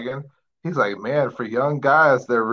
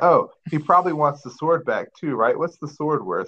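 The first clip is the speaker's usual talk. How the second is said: dripping, mocking, extremely sarcastic delivery; 3 semitones higher than usual. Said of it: "It's extremely sarcastic".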